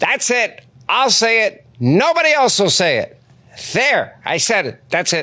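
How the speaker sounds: high, swooping pitch swinging on every phrase. Showing the guest the impression of him that gets the biggest reaction: Mark Levin impression. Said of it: "How would Mark Levin respond to this?".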